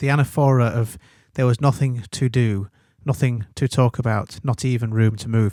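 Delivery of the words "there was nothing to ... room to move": ordinary talk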